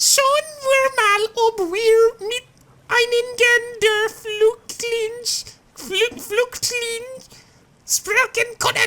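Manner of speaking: high-pitched voice. A reporter speaking in a high-pitched voice. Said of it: "Is that the high-pitched voice?".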